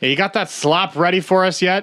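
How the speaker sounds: hollering from far off. Voicing someone calling across a camp for food: shouting from a distance. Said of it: "shout off in the distance".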